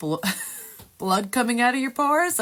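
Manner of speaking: talking through laughter. Retelling finding blood coming out of the pores, laughing while talking. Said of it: "I don't know why I'm laughing".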